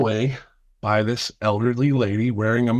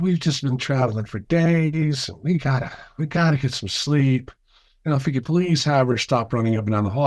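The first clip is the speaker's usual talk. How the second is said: put-on big, sugary Southern Georgia accent, words drawn out; 2 semitones higher than usual. Retelling what a woman said, imitating her sweet georgia accent. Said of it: "big Southern accent, like a Georgia accent".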